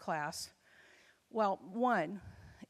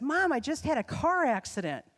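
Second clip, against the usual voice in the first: thrilled, gushing, really excited, high and swooping delivery; 5 semitones higher, 6 dB louder than usual. Mother retelling her child's phone call, imitating her excited voice. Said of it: "she said in a really excited voice".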